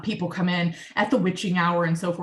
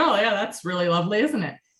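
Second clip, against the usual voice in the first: mocking, sarcastic tone. Retelling mocking the situation to a business partner: retelling own mocking remark. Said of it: "I was mocking the situation".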